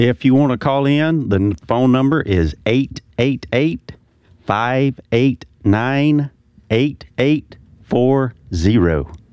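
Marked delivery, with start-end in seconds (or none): 1.7-9.1 slow, precise, careful delivery. Giving the phone number to call in to the show: slow, precise reading. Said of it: "that was slow".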